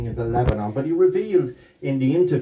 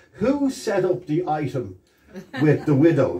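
grand, imperious, lordly delivery; 3 semitones higher than usual. Retelling the boss's question to the staff in the corral: imitating an imperious voice. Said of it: "in his beautiful imperious voice".

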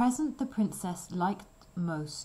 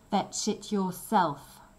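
mean, nasty, spiteful tone; 4 dB louder than usual. The maid answers the princess's request to fetch water, in a nasty voice. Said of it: "said the maid in a nasty voice".

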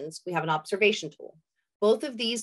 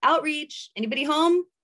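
friendly, high-pitched holler carrying far; 7 semitones higher, 3 dB louder than usual. Showing outreach workers how to announce themselves in an encampment, hollering out. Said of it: "what I like to do is holler out".

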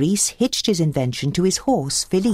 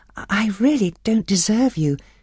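polite, courteous tone; 4 semitones higher than usual. Turning down a suitor's marriage proposal, said as a polite refusal. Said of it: "Belle tried to say no politely".

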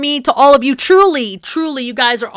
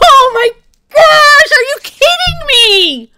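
loud, very high, drawn-out yelling outburst; 14 semitones higher, 6 dB louder than usual. Playing a hardcore game and pleading with a spider not to kill them, yelling. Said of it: "Sorry, I yelled".

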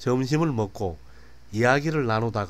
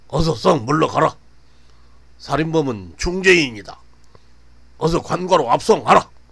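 very loud, high, barked commanding shout; 5 semitones higher, 10 dB louder than usual. The constables' leader orders the arrested man taken away, shouting. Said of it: "대장으로 보이는 포졸이 소리쳤다".

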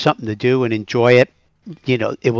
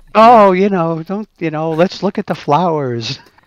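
put-on high, ditzy flower-child voice, hippie girl; 6 semitones higher than usual. Imitating a game elf described as a hippie flower girl: imitating Felicia Day's ditzy elf voice. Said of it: "a mix of a elf and a hippie, uh, flower girl type thing".

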